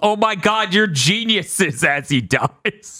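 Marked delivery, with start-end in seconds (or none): 0.0-1.8 put-on villain yell, higher pitch. Imagining a defeated villain's last words, imitating a villain yelling. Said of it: "he just yells".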